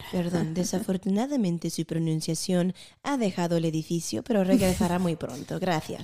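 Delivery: put-on Castilian Spanish accent from Spain. Joking after a mispronunciation: spain spanish accent. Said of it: "Era el acento español".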